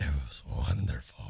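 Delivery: creaky, rough smoker's rasp, very low. Back from vacation, a podcast host answers the other host, in a smoker's voice. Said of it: "Why you sound like um who is it?".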